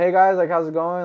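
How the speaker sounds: put-on peppy high energy. Retelling walking into the clinic and greeting staff: imitating own high-energy greeting. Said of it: "brought the high energy".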